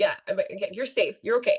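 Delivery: normal talking voice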